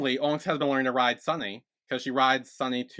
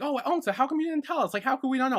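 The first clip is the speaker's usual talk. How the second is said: very high, play-acted, lighthearted playful teasing; 13 semitones higher than usual. Retelling how characters reacted to news: imitating playful teasing. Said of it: "playfully being like".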